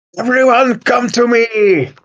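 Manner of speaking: very high-pitched, rallying shout. In a role-play game, a character yells to everyone from the cabin. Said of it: "I yell at the cabin".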